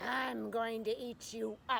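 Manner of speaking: menacing, growled lion voice. Reading a story aloud, the lion threatens the girl, growling. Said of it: "he growled and said".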